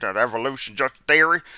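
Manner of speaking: character voice in a country accent. Showing one of the random characters that turn up, slip into a country Hovind voice. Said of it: "Sometimes you get that there country Hovind".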